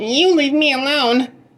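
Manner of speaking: very high, squeaky, scared-sounding goblin voice. Narrator reads the little goblin's words to Herschel in a squeaky goblin voice. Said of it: "he squeaked".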